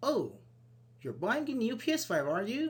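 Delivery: astonished, surprised reaction. Giving a spoken example of a reply that sounds surprised. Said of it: "It's like a surprise".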